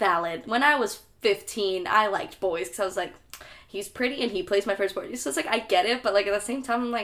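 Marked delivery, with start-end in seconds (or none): none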